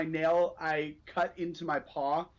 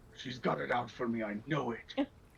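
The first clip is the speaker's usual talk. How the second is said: hushed, low grumbling mutter under the breath; 6 semitones lower, 5 dB quieter than usual. Muttering in character while a companion keeps talking: muttering under breath. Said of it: "under my breath, I mutter".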